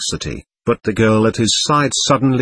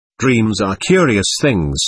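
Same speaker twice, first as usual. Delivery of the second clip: plain reading voice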